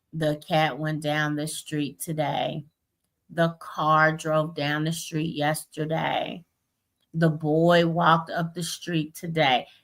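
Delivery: flat monotone reading voice, never changing. Demonstrating how a beginning reader reads aloud, flat monotone reading.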